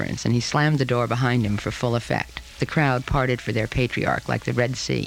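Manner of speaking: plain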